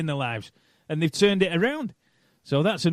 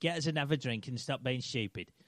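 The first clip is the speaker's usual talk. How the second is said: very hushed, half-formed, off-target put-on voice, muttered softly; 5 semitones lower, 14 dB quieter than usual. Trying out an impression after being told he can't do Brian Clough: Brian Clough impression. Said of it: "I'm trying to think how I'd do that".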